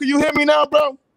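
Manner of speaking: shrill, very loud, high-pitched shout. Asking the others if they can hear now: shouting. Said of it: "stop shouting, bro".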